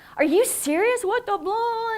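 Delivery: mock shrill, very high, furious yelling. Retelling how a cursing man yelled at him on the phone, retelling an angry yell. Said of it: "And yelling at me".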